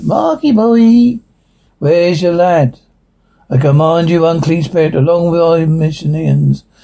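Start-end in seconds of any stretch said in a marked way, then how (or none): 0.0-2.8 put-on demonic voice with a Scouse Liverpool accent. In an exorcism scene, the demon calls out to Marcus: demonic voice, Liverpool accent. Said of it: "Liverpool accent".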